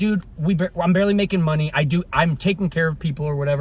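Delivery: normal talking voice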